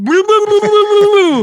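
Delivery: shrill, very high, loud, jeering mocking babble. Cursing out the flipper-fin guys in the tank, doing an impression of them. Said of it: "That's my impression of you guys".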